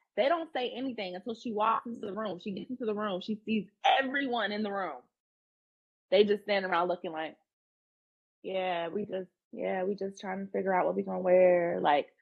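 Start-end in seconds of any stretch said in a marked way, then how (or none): 8.5-11.8 put-on flat, low-energy tone. Retelling how the group in the room answered her: imitating a low-energy reply. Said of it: "energy down".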